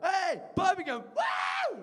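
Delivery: very high, whooping, swooping, excited hype-man announcer. Speaker imagines an automated train voice announcing a stop, excited train announcement. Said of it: "I don't expect them to be excited".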